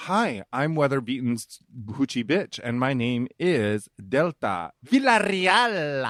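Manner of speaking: slow, drawn-out newscaster voice. Acting out a weather-beaten reporter introducing herself: imitating a local newscaster. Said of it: "Then you would be like".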